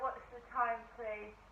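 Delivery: ordinary delivery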